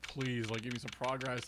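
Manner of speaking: put-on begging, pleading tone. Retelling asking the game for progress: imitating own begging. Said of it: "I'm begging".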